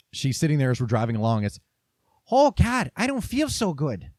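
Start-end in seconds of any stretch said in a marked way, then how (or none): 2.3-4.0 cartoonish Midwestern accent. Retelling what a woman said during a car ride, cartoonish Midwestern mom accent. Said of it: "like a stereotypical cartoonish Midwestern mom accent".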